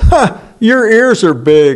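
derisive, mocking, sneering jeer. Retelling how everybody mocked someone's big ears: imitating mocking taunt. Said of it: "the derision and the mocking".

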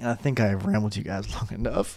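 voice cracking. Host wrapping up at the 30-minute mark, addressing listeners, voice cracking. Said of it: "My voice cracked".

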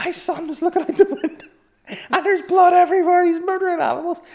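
very high, frantic, hysterical screaming. Retelling a phone call from a complainant, imitating hysterical screaming woman. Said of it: "she was in hysterics, like, screaming down the phone".

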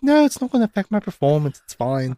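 acted pouty, petulant voice. Retelling how a sulking character answered an explanation: imitating a pouty tone. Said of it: "really pouty".

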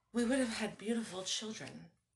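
murmured under the breath. Drinking with Jerry, the narrator thinks of Alex and speaks under the breath. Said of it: "I said under my breath".

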